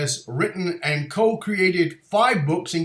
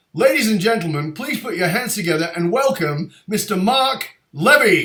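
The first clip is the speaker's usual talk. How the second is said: put-on radio dj announcer voice; 3 semitones higher, 4 dB louder than usual. Host introduces his guest to the audience in a disc jockey voice. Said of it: "that disc jockey voice".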